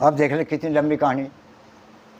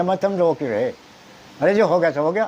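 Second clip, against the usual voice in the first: ordinary talk, nothing marked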